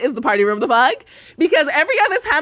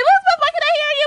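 put-on jealous, angry, high-pitched yelling. Retelling what the angry friend said in the car: imitating someone yelling.

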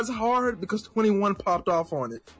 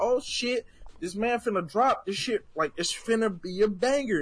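ordinary talk

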